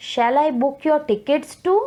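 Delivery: rising pitch, climbing up on "too". Explaining question intonation, saying an example question with a rising question intonation. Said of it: "the tone has risen up".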